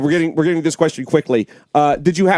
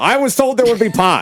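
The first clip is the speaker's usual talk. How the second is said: put-on elderly politician voice, pitched higher; 5 semitones higher than usual. Staying in the bit after being told to leave: Joe Biden impression. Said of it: "Joe, leave, okay?".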